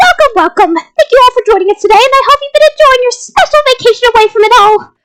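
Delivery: high, high-energy, peppy sports announcer voice. Reading aloud, the narrator voices an announcer welcoming students, Monokuma voice. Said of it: "His voice was more high energy".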